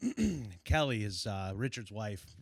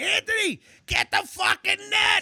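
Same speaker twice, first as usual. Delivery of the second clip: very high, loud, frantic scream; 12 dB louder than usual. Retelling a fishing trip where he screamed for the net, retelling a scream. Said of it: "he's screaming at me".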